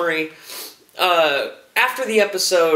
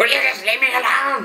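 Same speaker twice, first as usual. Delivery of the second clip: put-on high, cranky, grumbling old man voice; 7 semitones higher than usual. Recapping a TV scene, the speaker acts out a character's line in Mister Filch voice. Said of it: "he gets into that old man Filch".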